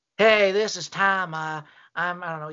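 mock-miserable old person voice. Retelling a man calling in on the phone, imitating a miserable old man. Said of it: "He sounded miserable".

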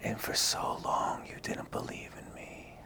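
hushed voice. Acting out her line to him in a scene, whispering. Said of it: "She's whispering this to him".

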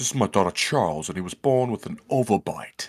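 upper-class gentleman. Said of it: "Sir William out there like".

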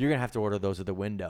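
mock-snapping, curt put-on tone. Retelling how she answered your order at Popeyes: retelling a snapped reply. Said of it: "She snapped right away and goes".

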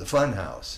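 ordinary delivery

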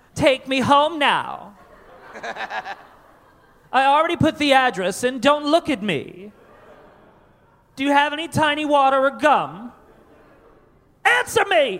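put-on, high, spoiled rich kid voice. In a comedy bit about a back-seat passenger, the speaker plays the passenger in a rich kid voice. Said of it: "that's my rich kid voice".

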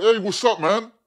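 high, loud shout. Imagining DJing in a club wearing a mask: imitating a shout. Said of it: "I'm shouting, like".

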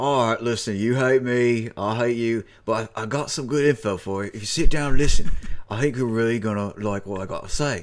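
put-on low-key, nineteenth-century-style English accent. Speaker acts out someone's words in an 1800s english accent. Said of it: "What is this 1800s English accent?".

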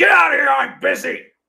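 piercing, very high, very loud, rasping full scream. Speaker retells a man screaming at a woman who walked in, retelling a scream. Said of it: "he just screamed at her".

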